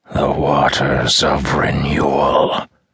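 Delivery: sibilant, hissing creature voice. Narrating a story as the creature understands, creature hissing. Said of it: "it hissed".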